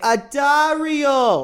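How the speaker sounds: put-on Jamaican-sounding accent, one word drawn out. Answering how people say the listener's name, in a Jamaican-sounding accent. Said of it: "that sounded Jamaican".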